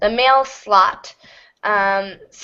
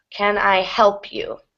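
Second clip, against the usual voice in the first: help stressed hardest, can kept weak. Explaining sentence stress in a question, stress on help. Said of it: "Help is the main content word or the most important word, so it will get the most stress".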